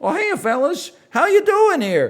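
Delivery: very high-pitched, loud, booming, swooping voice. Telling a cartoon bar story with bikers: Mickey Mouse voice. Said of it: "and then Mickey Mouse goes".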